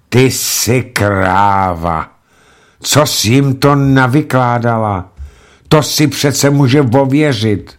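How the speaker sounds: fed-up, exasperated outburst with kráva drawn out. Fík, unable to bear it any longer, roars at his secretary Hedvika. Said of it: "Fík to nevydržel a zařval".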